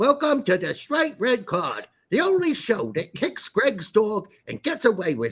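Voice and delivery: whiny, high, swooping voice. Introducing the show the way Wuxia speaks, in a whiny Wuxia voice. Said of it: "He talks all whiny like this".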